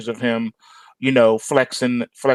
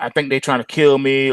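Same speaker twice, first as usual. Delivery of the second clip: ordinary talk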